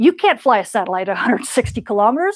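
speech broken up, laughing through the words. Mid-explanation, apologizing because they can't stop laughing: laughing while speaking. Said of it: "I'm sorry, I'm laughing".

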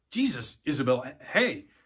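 ordinary delivery

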